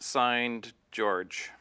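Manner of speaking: plain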